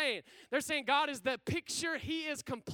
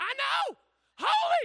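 mock very high, shrill, very loud thrilled cry; 12 semitones higher, 8 dB louder than usual. Voicing the second angel in an imagined heavenly scene, acting out an excited angel. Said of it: "The other angel's like".

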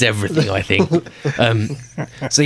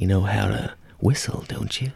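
put-on old Hollywood femme fatale voice, quieter; 6 dB quieter than usual. Imitating a femme fatale in an old movie clip: golden age Hollywood starlet voice. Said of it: "that kinda golden age of Hollywood starlet kind of voice".

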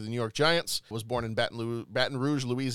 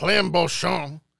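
raised, pitched-up Cajun accent; 5 semitones higher, 6 dB louder than usual. Rereading a list of notable deaths, saying a name: Cajun accent. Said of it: "just the right amount of Cajun".

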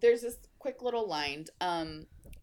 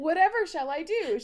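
loud, high-pitched put-on voice; 8 semitones higher, 6 dB louder than usual. Reading a character's mocking line aloud: high-pitched voice. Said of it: "she said in a high-pitched voice".

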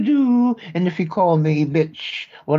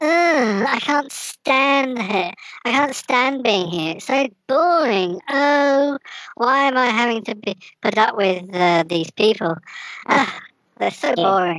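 put-on whiny bratty kid voice, much higher; 6 semitones higher than usual. Demonstrating a voice exercise, playing a disagreeable kid: whining bratty kid. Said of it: "More whining".

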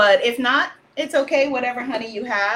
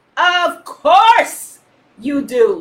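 loud, resounding, booming voice; 3 semitones higher, 6 dB louder than usual. Narrator reads his reply to the gents he summoned, booming. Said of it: "he booms".

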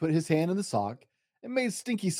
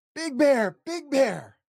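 high, loud, frightened, scared cry; 8 semitones higher, 5 dB louder than usual. Narrator reads Little Bear calling Big Bear after seeing a monster, crying out in fear. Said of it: "Cried Little Bear".

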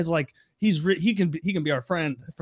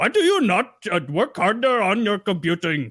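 put-on Indian accent, much higher; 3 semitones higher than usual. Joining a friend's bit, the speaker does an Indian guy: Indian accent. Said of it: "Indian guys".

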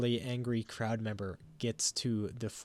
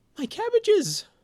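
loud exclaiming, much higher; 10 dB louder than usual. A game master voices a person whose cabbage cart was hit, loud exclamation. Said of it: "in a voice that everybody can hear".

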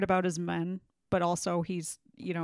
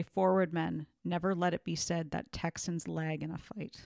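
plain

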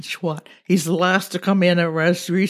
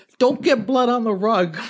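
mock yelling, higher; 4 semitones higher than usual. Telling a machete story, acting out another person's reply: retelling a yell. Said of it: "And Ross yelled".

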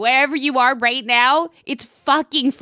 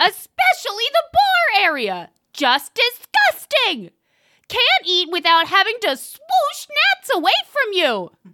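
put-on enraged, furious shouting, higher; 9 semitones higher than usual. Reading a one-star review aloud in an impression of the co-host: put-on enraged yelling. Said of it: "I'm sorry I yelled so much".

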